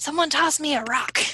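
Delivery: loud theatrical whisper. After saying they will whisper shout, calling out to the others; whisper-shout. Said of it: "kind of like whisper shout like".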